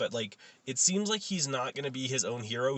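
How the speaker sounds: normal talking voice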